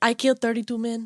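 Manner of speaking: imitated Colombian-accented voice. Quoting an actress's line from a movie: impression of Sofia Vergara. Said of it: "That was a really good impression of her".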